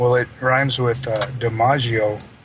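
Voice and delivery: normal talking voice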